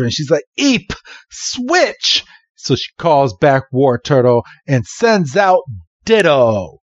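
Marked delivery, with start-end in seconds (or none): 0.6-2.2 very high, desperate, cornered, squeaky cry. Retelling a battle as Team Rocket attacks; Green, mock-desperate. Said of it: "Green is now desperate".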